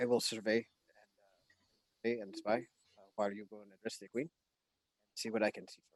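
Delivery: hushed character whisper. Offering in character to spy while the others address the queen, whispering in character. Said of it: "Axel's gonna whisper in Aquan".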